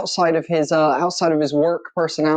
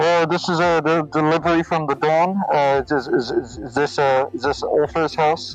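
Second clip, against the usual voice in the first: muffled, dampened, smothered speech. A narrator voices someone at the door with a delivery; muffled voice. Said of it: "you hear a voice muffledly, muffledly say".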